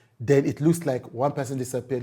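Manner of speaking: normal talking voice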